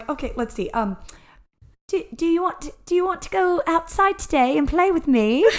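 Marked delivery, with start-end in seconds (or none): 2.1-5.4 put-on British accent, much higher, quieter. Trying out an accent off the cuff for the others, in a British accent. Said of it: "maybe British".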